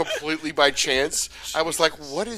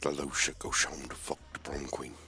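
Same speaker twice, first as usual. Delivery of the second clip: impression, much lower and much quieter; 13 semitones lower, 13 dB quieter than usual. Playing a guessing game with friends, the speaker does a mystery impression. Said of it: "I'll do the first one".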